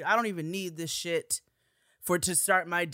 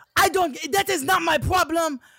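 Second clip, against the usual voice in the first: screaming, higher and louder; 10 semitones higher, 8 dB louder than usual. Retelling an argument during a car ride: imitating someone screaming. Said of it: "And he is screaming at me".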